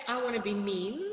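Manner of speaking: ordinary talk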